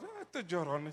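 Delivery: low, soft, dismissive scoff.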